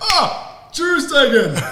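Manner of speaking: high, loud, mocking yell.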